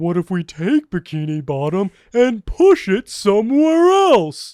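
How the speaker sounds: very loud, high, swooping, sing-song cartoon voice. Showing off the impression they like doing, Patrick impression. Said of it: "I do like my Patrick though".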